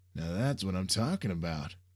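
plain

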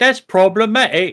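high, loud British accent. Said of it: "if you say P C things in a British accent".

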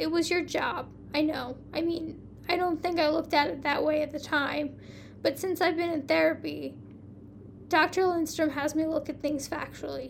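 ordinary delivery

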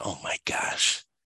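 put-on embarrassed tone. Retelling a guy whose card trick fails, acting out his embarrassment. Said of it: "he looks really embarrassed".

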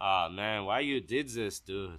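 put-on drawn-out Ukrainian accent, stretched words. Imitating how a friend from Ukraine talks: imitating a friend's Ukrainian accent. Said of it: "he talks like that".

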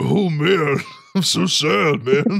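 gloomy cartoon donkey voice. Imagining a Winnie the Pooh remake, the speaker does Seth Rogen voicing Eeyore. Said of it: "Seth Rogen better be the voice of Eeyore".

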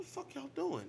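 very high, fed-up, exasperated outburst. Retelling what a guy said amid street commotion: imitating the climber. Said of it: "And this guy was like".

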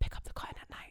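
very quiet, breathy whisper under the breath. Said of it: "and she whispers".

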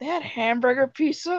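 genuinely surprised, caught off guard, disbelieving. Chatting about Chuck E. Cheese pizza, learning something new: surprised. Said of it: "you sounded really surprised".

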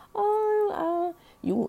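very high-pitched, flirty cooing voice. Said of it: "she's flirting back".

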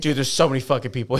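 exasperated, fed-up, pissed-off griping. Retelling what an annoyed server said: imitating a pissed-off server. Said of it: "He was so pissed".

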